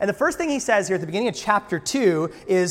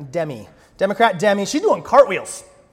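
plain

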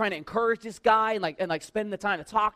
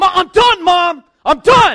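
put-on very loud, high, drawn-out, top-of-the-lungs kid scream; 9 semitones higher, 15 dB louder than usual. Retelling a ten-year-old on a ski slope cursing his mom: imitating Billy screaming. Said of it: "he's screaming at the top of his lungs".

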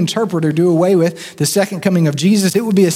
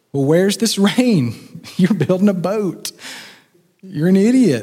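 put-on sneering, mocking, scoffing taunt. Acting out scoffers jeering at a boat builder: imitating mocking scoffers. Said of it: "you can almost hear the, the mockers".

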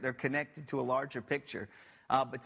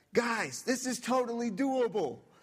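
put-on high, drawn-out yell; 8 semitones higher than usual. Retelling standing up during a comeback and yelling to the group, retelling a yell. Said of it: "I'm standing up and I'm yelling".

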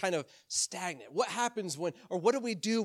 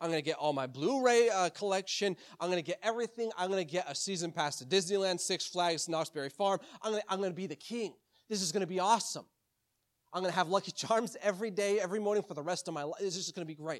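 plain

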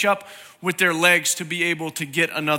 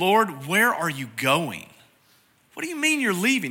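mock incredulous, acted-out disbelief. Retelling a disciple's question to Jesus, acting out an incredulous question. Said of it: "Thomas asked almost incredulously".

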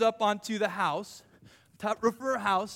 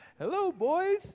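put-on attempted girl voice, pitched up high; 8 semitones higher than usual. Playing Rahab taking them into her house, attempted Rahab girl voice. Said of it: "I can't talk like a girl".

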